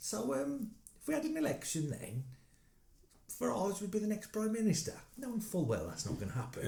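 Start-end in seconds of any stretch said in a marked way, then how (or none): 0.0-4.9 put-on, very high, stupid-sounding voice. Speaker repeats what he keeps saying to people to wind them up: fake stupid questioning voice. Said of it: "in a like fake stupid questioning voice".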